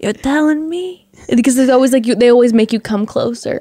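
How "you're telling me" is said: very hushed, barely audible, slightly high voice. Mimicking how the other speaker always says the phrase, super quiet. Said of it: "you always say it super quiet".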